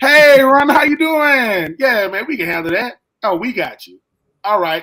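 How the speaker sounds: loud, unhurried, easygoing fight-promoter talk. Acting out the fight promoters on a phone call: imitating the fight promoters. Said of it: "They're like".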